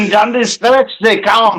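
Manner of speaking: failed Russian accent. Trying a Russian accent on a line: Arnold Schwarzenegger-like accent. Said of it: "that sounded like Arnold Schwarzenegger".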